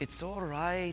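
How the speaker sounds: put-on speaking with a German accent. Retelling what Bruni said from her bed, in Bruni's German accent. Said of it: "she said in her German accent".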